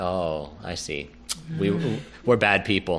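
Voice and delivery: low, hushed, somber murmur, sheepish. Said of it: "everyone gets real somber. They're like".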